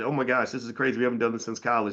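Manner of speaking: ordinary talk, nothing marked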